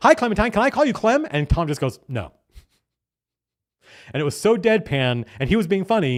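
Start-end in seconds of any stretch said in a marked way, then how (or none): 0.0-1.3 put-on very high, gushing manic pixie dream girl voice. Retelling a roleplaying session, speaker imitates a player's manic pixie dream girl character. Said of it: "very manic pixie dream girl type character".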